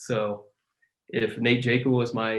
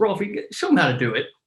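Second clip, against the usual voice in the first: mocking, sarcastic delivery, pitched up; 6 semitones higher, 3 dB louder than usual. Retelling a teammate's remark at a basketball court: imitating Davey Arno sarcastically. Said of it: "I think sarcastically goes".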